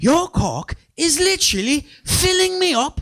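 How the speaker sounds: very high, slow, put-on British accent. Retelling what a woman from London said: imitating a British accent. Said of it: "heard in a British accent".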